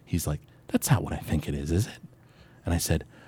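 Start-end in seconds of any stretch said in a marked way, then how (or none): 0.6-1.9 put-on whisper, lower and quieter. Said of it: "whispered to me and he was like".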